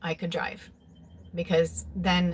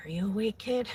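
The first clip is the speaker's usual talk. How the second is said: put-on whisper, higher; 3 semitones higher than usual. Retelling how dad whispered through the bedroom door: imitating a whisper. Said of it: "whisper through the door".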